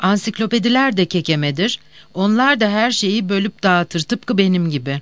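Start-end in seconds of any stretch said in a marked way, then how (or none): none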